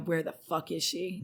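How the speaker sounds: imitated pissed-off tone. Retelling storming in to look for a girl: imitating an angry question.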